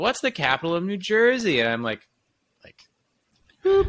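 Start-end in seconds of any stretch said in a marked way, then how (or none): 0.0-1.6 mock cheerful happy announcer voice, higher. Retelling a trivia question from an airport announcement: imitating a really happy voice. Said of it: "in this really happy voice".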